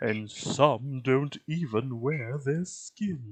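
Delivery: bad put-on spooky horror-actor voice. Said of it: "time for me to do a terrible Vincent, or a Boris Karloff impression".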